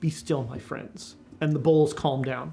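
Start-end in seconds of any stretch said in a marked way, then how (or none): 0.0-1.1 quiet, low, soft murmured voice. Voicing a character leaning over the bowls to calm them, in a quiet voice. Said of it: "he says in a quiet voice".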